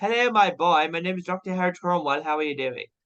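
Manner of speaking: London accent, doctor character voice. Showing a voice-acting cosplay character, London accent as Doctor Cromwell. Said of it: "he is from London".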